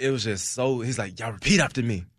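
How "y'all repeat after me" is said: put-on raspy voice. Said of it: "it's like a raspy".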